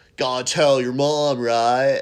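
put-on loud, big, drawn-out surfer accent. Quoting a film role to other speakers: Heath Ledger surfer accent. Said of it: "this insane surfer accent".

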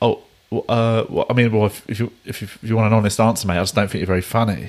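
sincere, stumbling, hesitant, measured, earnest delivery. Retelling a heckler's reply to a comedian: imitating a genuine, measured reply. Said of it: "the guy said it really genuinely and measured".

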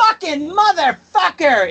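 put-on Jersey accent with vowels pushed very high. Retelling what a wrestler shouted after a chair shot: imitating Joey Janela's Jersey accent. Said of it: "in that, like, Jersey accent of his".

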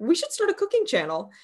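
put-on offhand joking tone. Recalling to the listener something they once said, retelling a joking suggestion. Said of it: "you said very jokingly".

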